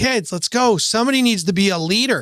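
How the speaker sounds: rousing calling out. Retelling calling up to the kids on the platform: retelling own yell. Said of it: "I just yelled up at the crew".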